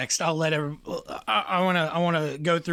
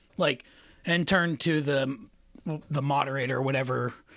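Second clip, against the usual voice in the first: ordinary delivery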